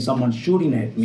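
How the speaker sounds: usual speaking voice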